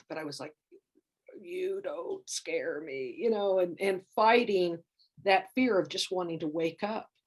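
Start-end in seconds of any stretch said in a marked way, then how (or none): 1.4-3.2 hushed, really gravelly, low, slow rasp. Retelling defying a frightening figure in their sleep, speaker uses a gravelly low voice. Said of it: "saying it with this really gravelly low voice".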